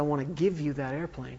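plain

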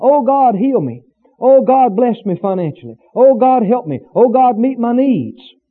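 ordinary talk

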